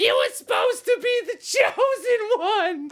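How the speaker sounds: very high-pitched New Jersey housewife voice. Retelling an overacted film line: imitating Ewan McGregor as a Jersey housewife. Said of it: "he turned into a Jersey housewife".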